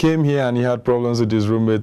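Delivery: plain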